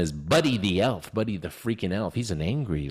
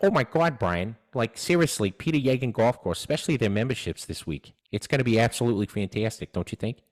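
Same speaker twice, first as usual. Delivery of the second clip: put-on animated cartoon dad character voice; 3 semitones higher than usual. Thank a golf course sponsor on the show, in a Peter Griffin voice. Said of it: "like Peter Griffin".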